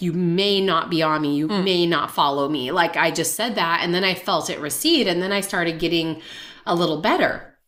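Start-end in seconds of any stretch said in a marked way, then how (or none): 0.0-2.7 firm, resolute, commanding tone. Retelling grabbing two handfuls of salt and addressing a looming presence, retelling a firm command. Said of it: "I just like very firmly".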